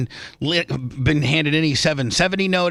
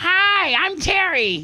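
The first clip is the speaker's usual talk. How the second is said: very high-pitched, way-up put-on voice. Imagine a man whose vocal cords were altered introducing himself in a real high-pitched voice. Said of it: "he has like a real high pitched voice now".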